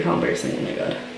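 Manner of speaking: soft, whispered, tearful and embarrassed. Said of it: "my eyes are getting so watery".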